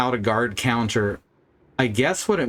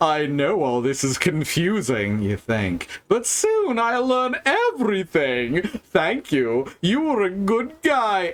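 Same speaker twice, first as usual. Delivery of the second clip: sinister evil villain voice, higher pitch; 7 semitones higher than usual. Reading a villain's lines aloud from a game: evil villain voice. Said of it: "I gotta do the voice for this person because they're so evil".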